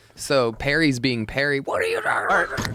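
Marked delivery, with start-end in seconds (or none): 1.6-2.8 angry, irritated, confrontational tone. Retelling a cart narc video, imitating Perry getting mad. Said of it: "And he gets so mad".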